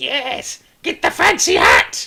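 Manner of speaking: shrill, very high, booming, drawn-out kobold yapping. Voicing kobolds yelling during a fight: yapping kobold voice. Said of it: "a yapping version of Draconic coming from the kobolds".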